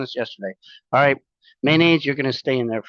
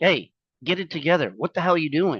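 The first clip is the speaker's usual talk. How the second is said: put-on yelling; 3 semitones higher than usual. Retelling how he scolds himself when he gets sidetracked: imitating yelling at himself. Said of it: "I yell at myself".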